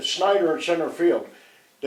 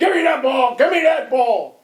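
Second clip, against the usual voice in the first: mock, high-pitched angry scream, said twice; 8 semitones higher, 4 dB louder than usual. Retelling how a pitcher screamed at a teammate for the ball: imitating a scream. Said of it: "Bowman screams at him".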